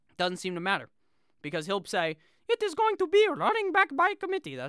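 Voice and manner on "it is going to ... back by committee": high, bad, fake French accent. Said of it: "that was not even a good French accent".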